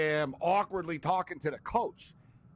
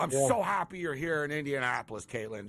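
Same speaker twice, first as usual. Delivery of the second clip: ordinary talk, nothing marked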